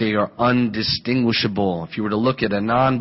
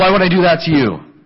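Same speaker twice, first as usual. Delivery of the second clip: gruff, indignant, loud, pitched-up angry tone; 8 semitones higher, 7 dB louder than usual. Retelling a brother's reply when suspected of a prank: imitating someone getting mad. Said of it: "got mad".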